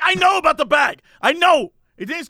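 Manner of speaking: annoyed, fed-up, irritated, loud and high. Retelling a man's reply after a woman says he didn't scan it: mock-angry. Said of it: "he's pissed now".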